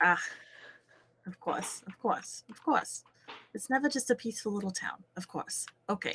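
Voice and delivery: grumbling low and soft to oneself. Player's character watches a girl walk over toward the group, muttering under breath. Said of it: "mutter under my breath".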